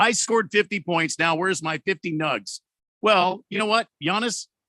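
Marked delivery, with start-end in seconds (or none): 0.0-2.6 mock self-important, entitled, demanding, boastful tone. Mocking a basketball player who asked for free food: mocking entitled Giannis impression. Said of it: "It does seem entitled".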